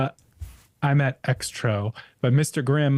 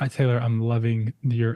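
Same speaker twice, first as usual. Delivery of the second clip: usual speaking voice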